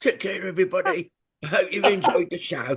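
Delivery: put-on toothless old man voice. Signing off the show to everybody, in Grandad Berrigan voice. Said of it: "bye from Grandad Berrigan ... changes into an old man. He takes his teeth out".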